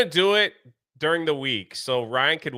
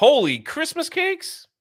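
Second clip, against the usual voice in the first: very high, cracking, breaking exclamatory voice; 14 semitones higher than usual. Reacting to praise for the duo, the speaker exclaims, voice cracking. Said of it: "My voice cracked right in the middle of that".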